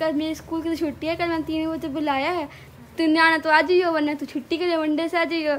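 usual speaking voice

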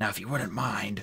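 ordinary delivery

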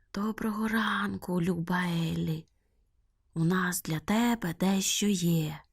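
hushed, slow, drawn-out whisper. Bats in a cave greet Eli; whispering. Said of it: "зашепотіли кажани".

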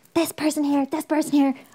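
high-pitched, loud, excited, hyped-up delivery. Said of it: "was just like".

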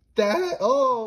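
voice cracking. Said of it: "my voice cracked".

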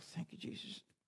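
very quiet, breathy whisper under the breath. Imitating someone going quietly to their seat: imitating someone speaking very quietly. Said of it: "very quietly say".

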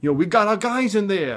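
put-on heavy New York accent. Retelling what a worker on the building said: imitating thick new york accent. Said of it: "really thick, you know, New York accent".

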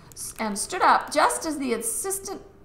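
plain

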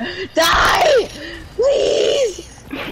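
raging, furious shriek.

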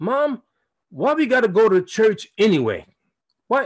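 put-on play-acted defiant child voice. Speaker recalls asking their mother at age seven about church, retelling defiant childhood question. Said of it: "like defiantly".

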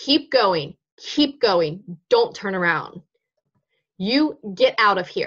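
mock firm, strong, authoritative commanding tone. Retelling pursuing a man on a path, retelling a strong, authoritative, loud voice. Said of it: "in that strong, authoritative, loud voice".

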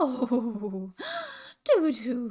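laughing, light and dismissive. A character answers another's silly explanation, laughing. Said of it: "laughed Hooter".

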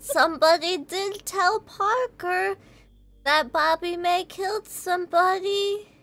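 small, high, slow creature voice, true drawn out. In a role-play game, answering a player's question as Goop, Goop's little slime voice. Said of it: "Just too Like a little slime from Dragon Quest, almost, but more oily. Mm-hmm. Yeah. And like... But we can't see the eyes for people who are still sane, right? Yeah, you just, right. All you see is it looks ... you hear that little voice that [name] and [name] cannot hear".

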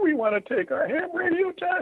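very high, squeaked-out words. Retelling asking the guy at the counter for the test: imitating a squeaky voice. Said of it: "we squeak out".

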